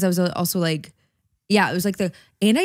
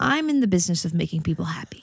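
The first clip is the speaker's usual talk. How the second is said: play-acted dead serious, very earnest, sincere tone; 3 dB quieter than usual. Retelling a friend confiding something: imitating Kyle speaking very earnestly. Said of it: "very earnestly, not a joke".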